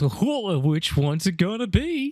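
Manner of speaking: high, slow, drawn-out, goofy cartoon voice. Acting out a line someone has to say, in a goofy Goofy-like voice. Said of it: "in a really goofy voice, like almost like Goofy from the Disney cartoons".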